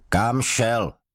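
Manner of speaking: sudden, sharp, high snapped-out bark. Narrator reads the sergeant suddenly demanding an answer of a man: barked. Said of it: "Štěkl na něho strážmistr nečekaně".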